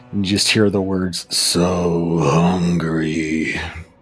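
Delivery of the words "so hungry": deep, low, throaty, drawn-out guttural moan. Voicing a creature whose head shoots toward a player: low guttural moan. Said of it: "come out in a low, guttural moan".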